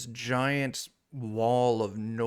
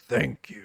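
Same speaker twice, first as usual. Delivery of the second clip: deep, rumbling low voice from deep down; 4 semitones lower than usual. Voicing the stone as it thanks them, in a deep rumbling voice. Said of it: "It's this deep rumbling voice".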